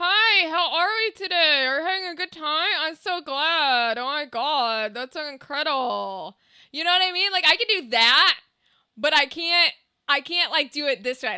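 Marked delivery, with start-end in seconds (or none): 0.0-6.4 ventriloquist talk through a still, open mouth. Showing how to talk without moving the mouth: ventriloquist voice, lips not moving. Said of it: "I can talk with, like, out moving my mouth".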